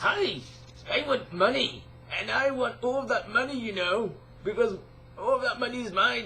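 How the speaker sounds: high cartoon crab voice. Seeing crabs and doing impressions of him, Mr. Krabs impression. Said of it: "I'm just totally dumb at doing voice acting".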